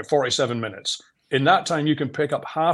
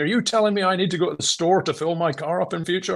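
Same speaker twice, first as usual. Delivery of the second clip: mild, heated mock shouting tone, held in check; 5 semitones higher than usual. Retelling a banker's angry question: imitating someone shouting. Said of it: "he started shouting at me".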